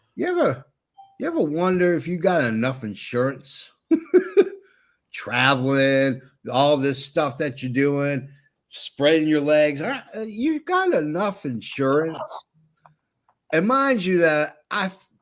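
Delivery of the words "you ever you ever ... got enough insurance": put-on heavy, laid-on Southern accent, swooping. Retelling his chat with a man who travels between New York and LA, talking really Southern. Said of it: "Started talking really southern".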